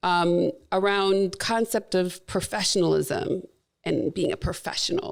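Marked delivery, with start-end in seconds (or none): 2.3-5.1 dripping sarcasm with ironic stress. Discussing an article someone sent in: sarcastic 'professionalism'. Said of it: "you hear the sarcasm in how I'm saying those terms".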